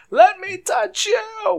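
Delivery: shrill, very high, very loud yelling. A player voicing their paladin who needs to lay on hands, yelling. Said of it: "now I need to start yelling".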